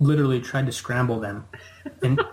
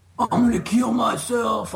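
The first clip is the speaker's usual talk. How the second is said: imitated drunk man's slurred speech, higher; 9 semitones higher than usual. Retelling a drunk dad with a gun: imitating a drunk man slurring. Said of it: "drunk out of his mind".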